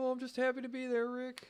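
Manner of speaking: very high, very loud squealing cartoon voice. Speaker describes how he felt being part of the crew, in a Morty impression. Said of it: "I can't do his voice, Rick and Morty".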